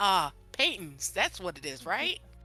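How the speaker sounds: put-on light Boston accent, sing-song. Speaking in character to a game master, somewhat boston accent. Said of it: "somewhat Boston with this accent".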